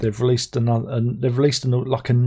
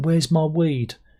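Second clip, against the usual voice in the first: light, mild shouted yell of a demanding man; 4 semitones higher than usual. Recounting a fight in a car park at one in the morning, mimicking the guy: retelling a shout. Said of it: "The guy was shouting".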